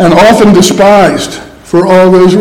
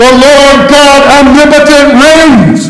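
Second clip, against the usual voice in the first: mock forceful, loud, pitched-up proclaiming shout; 8 semitones higher than usual. Picturing all believers together crying out at once: shouting. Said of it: "all shouting".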